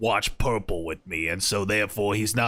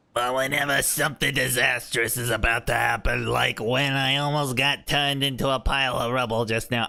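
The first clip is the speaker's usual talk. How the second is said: put-on cartoon sailor voice; 3 semitones higher than usual. Redoing a line in character, Popeye voice. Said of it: "Popeye voice".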